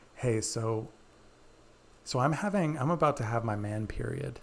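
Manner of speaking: conspiratorial, secret-sharing tone. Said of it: "kind of in this conspiratorial way".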